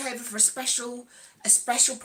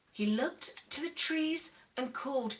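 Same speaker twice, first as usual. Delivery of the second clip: plain reading voice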